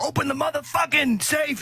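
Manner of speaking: very high-pitched screaming voice. Retelling a robbery, imitating the gunman screaming at a worker: imitating a robber screaming. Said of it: "was screaming at the fucking person".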